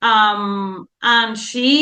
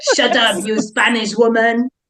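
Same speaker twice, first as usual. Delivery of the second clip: put-on French accent. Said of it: "Love when you do accents".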